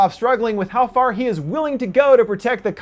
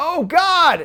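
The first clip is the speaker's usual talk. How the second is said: high, strained yell full of agony. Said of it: "literally yelling out".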